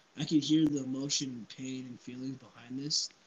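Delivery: ordinary talk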